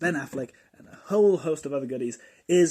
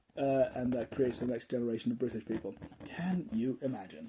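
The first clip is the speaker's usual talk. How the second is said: ordinary talk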